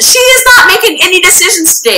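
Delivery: play-acted, very high-pitched yell. Retelling how someone yelled at the doctor: imitating Aviram yelling. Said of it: "And Aviram yells".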